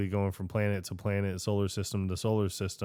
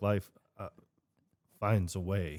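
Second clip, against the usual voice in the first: halting delivery, pausing and breaking up around uh; 4 dB quieter than usual. Quoting a Jurassic Park line with a halting pause: Jeff Goldblum halting delivery. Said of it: "when he's just like".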